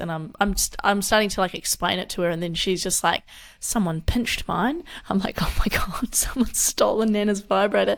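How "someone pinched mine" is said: put-on vague European accent. Retelling what a grandmother said to her, in a put-on European accent. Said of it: "a European accent or something".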